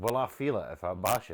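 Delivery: normal talking voice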